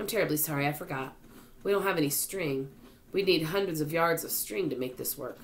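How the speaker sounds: ordinary delivery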